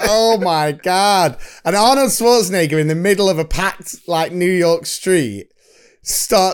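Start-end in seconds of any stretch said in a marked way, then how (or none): 0.0-1.4 put-on teasing voice, pitched higher. Retelling the neighbour teasing on the phone: Ted taunting impression. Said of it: "he's going like".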